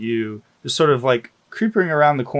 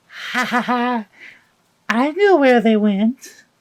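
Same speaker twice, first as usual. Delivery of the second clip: put-on very high, giggly, cackling little child voice; 12 semitones higher, 4 dB louder than usual. A narrator voices an unseen speaker heard from behind, in a small child's voice. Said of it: "the sound of a voice of what you assume to be a small person or a child".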